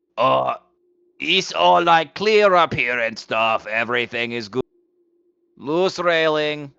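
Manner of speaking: loud, high-pitched disguised voice hollering. Looking out and calling as loud as you can: loud disguised call in Goblin. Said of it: "call out as loud as I can in Goblin".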